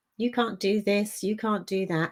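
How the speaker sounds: ordinary delivery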